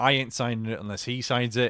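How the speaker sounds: plain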